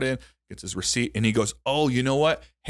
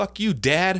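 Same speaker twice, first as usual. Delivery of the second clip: put-on, sudden, very high-pitched yelling outburst; 9 semitones higher than usual. Retelling yelling at a stranger at Walmart: retelling own yell. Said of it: "And I just start yelling at him".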